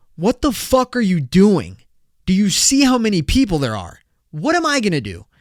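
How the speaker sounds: furious, angry shouting with swooping pitch. Retelling what they yelled at a guy, re-enacting the yell. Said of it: "So I literally yelled".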